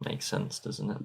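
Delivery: odd, very soft, hushed murmur. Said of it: "I don't know why I'm talking like this".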